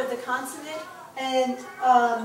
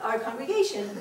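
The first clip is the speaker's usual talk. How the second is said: plain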